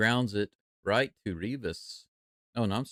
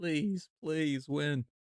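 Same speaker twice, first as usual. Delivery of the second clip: play-acted crying, tearful and pleading voice; 6 semitones higher, 3 dB quieter than usual. Imitating fans in the stands pleading for a win: imitating fans crying and pleading. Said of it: "crying and begging and pleading".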